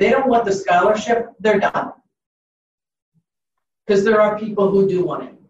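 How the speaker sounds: curt, blunt, no-nonsense, exasperated frankness. Speaker explaining follow-ups with scholarship applicants who don't respond: blunt tone. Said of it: "I apologize for my tone of voice".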